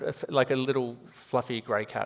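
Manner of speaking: plain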